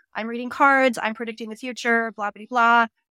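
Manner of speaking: normal talking voice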